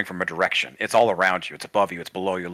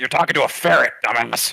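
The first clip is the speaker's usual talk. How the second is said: irritated, angry man's voice, pitched higher; 5 semitones higher, 5 dB louder than usual. A voice rings out from the darkness inside a magic ring: angry man's voice. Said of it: "that angry man was in".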